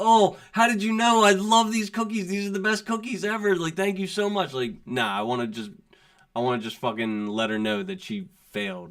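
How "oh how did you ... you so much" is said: high, fake-delighted gushing, put-on overjoyed. Acting out pretending to love the cookies after getting an F, mock-overjoyed. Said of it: "put on this act like".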